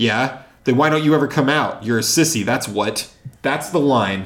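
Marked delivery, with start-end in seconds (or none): 0.7-2.4 enthusiastic, harsh, mean schoolyard bully jeer. Reading a bully's line aloud to show how it sounds, enthusiastic and harsh. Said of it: "You said it with more enthusiasm than the child".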